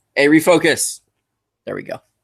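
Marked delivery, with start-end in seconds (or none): 0.2-1.0 loud yelling, shouting, higher pitch. While filming, the speaker breaks off, yelling at the camera. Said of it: "Sorry, yelling at the camera".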